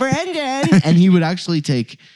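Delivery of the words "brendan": very high, squeaky whine, not nasal. Imitating an annoying dude calling out a name, squeaky, whiny voice. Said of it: "this dude with like this squeaky voice and kind of a whiny voice".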